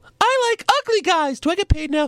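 fake woman's testimonial voice, very high pitched. Voicing a testimonial inside a made-up commercial: put-on woman's testimonial voice. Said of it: "Just listen to this testimonial".

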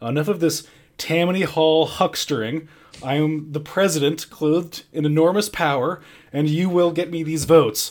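acted forceful, commanding voice. Retelling a scene where the president finally pounds a table: imitating a forceful table-pounding outburst. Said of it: "finally pounds a table, and he's like".

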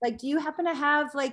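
yelled out high and loud. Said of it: "they probably would yell out to me".

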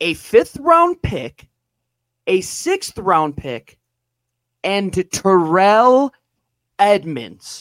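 each item drawn out, as slow as possible. Announcing what was given up in a trade: said as slowly as possible. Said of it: "I will say this as slow as possible".

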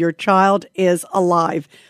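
ordinary delivery

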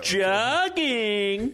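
very high, sing-songy, sarcastic taunting tone. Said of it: "in a real sing-songy, sarcastic tone".

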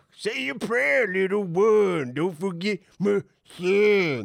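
high Southern drawl with son drawn out. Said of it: "he put a Southern accent on that character".

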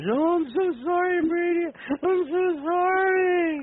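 put-on tearful voice. Imitating the caller's late-night apology messages: imitating Joe apologizing tearfully. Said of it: "at three o'clock in the morning, I'm gonna get, like, eighteen messengers".

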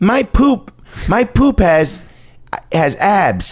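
put-on high, innocent little kid voice.

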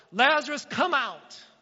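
loud, high commanding shout. Reading a Bible passage aloud, voicing Jesus after his prayer, shouting. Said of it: "Then Jesus shouted".

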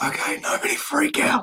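nearly voiceless, straining, barely audible voice. Guest introduced on a program speaks after losing their voice yesterday, voice nearly lost. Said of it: "I lost it yesterday".

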